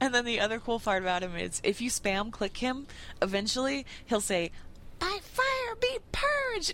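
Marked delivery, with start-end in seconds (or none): 5.0-6.7 tiny, very high, slow, drawn-out squeaky voice. Describing what the Ragnaros campfire says when spam-clicked, tiny little Ragnaros voice. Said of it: "in like this really tiny little voice".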